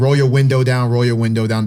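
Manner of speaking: ordinary delivery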